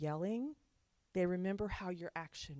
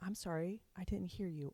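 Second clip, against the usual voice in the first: whispering. Showing how to answer a screaming child: whispering.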